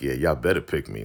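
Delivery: voice with attitude. Retelling a reality show pick, imitating someone with attitude. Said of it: "she got an attitude like".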